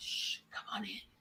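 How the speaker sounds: very quiet, hushed, shushing whisper. Retelling how people in a boardroom greeted them: imitating whispering. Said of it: "They were whispering".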